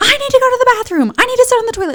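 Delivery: mock insistent yell, voice pitched way up. Retelling arguing with young nurses during labor: retelling own yelling at nurses. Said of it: "yelling at them".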